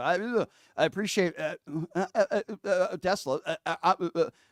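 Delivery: slow, halting stammer, full of drawn-out "uh"s. Showing a caller an Elon Musk impersonation: Elon Musk impression. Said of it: "your Elon Musk impersonation".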